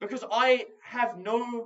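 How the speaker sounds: high, slow whine. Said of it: "I really sound like I'm whining here".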